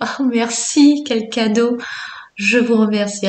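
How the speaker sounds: tearful voice, on the edge of crying. Thanking viewers for their comments, tearful, close to crying. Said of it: "j'ai les larmes aux yeux".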